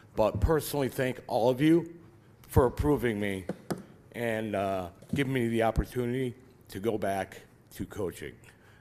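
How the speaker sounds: sincere, moved, slightly emotional grateful tone. Speaker thanking everyone for approving a return to coaching, a little emotional. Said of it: "sorry, a little emotional".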